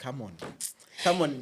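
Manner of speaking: ordinary delivery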